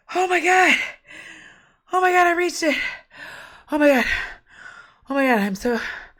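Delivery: loud, high, winded, breathless exclamations. Reacting after finally reaching the mausoleum in the game: breathless. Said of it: "I'm fucking breathless".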